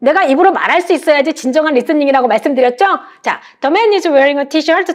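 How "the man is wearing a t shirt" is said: very fast, rapid-fire, run-together delivery. Reading an english picture-description sentence for listening practice: very fast. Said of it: "이렇게 빨리 자꾸 내가 말을 해서".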